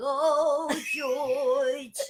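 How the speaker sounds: high, very loud, belted showbiz voice. Showing a bit from a sketch audition: Bernadette impression. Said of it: "I had to do Bernadette".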